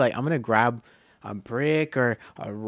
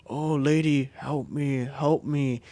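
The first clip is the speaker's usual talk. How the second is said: put-on slow old-man voice; 2 semitones higher, 3 dB quieter than usual. Recounting a voice that scared a woman, imitating an old man's voice. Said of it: "This sounds like an old man".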